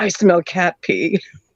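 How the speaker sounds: hushed, close, teasing and sneaky whisper. Retelling friends whispering a tease into the ear: imitating a whisper. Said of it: "whispering in my ear".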